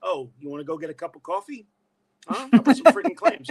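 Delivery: put-on very loud, old-school Brooklyn accent. Retelling how he talked growing up: imitating his old Brooklyn accent. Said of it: "I would talk like this".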